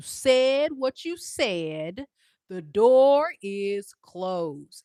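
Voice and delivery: very loud, slow, deliberate, belted-out delivery. Telling Scorpio the door is closed, in a NeNe Leakes voice. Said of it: "in my Nene Leakes voice".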